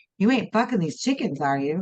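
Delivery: ordinary delivery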